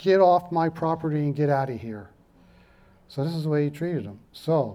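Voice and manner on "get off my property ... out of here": ordinary talk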